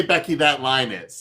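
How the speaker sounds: plain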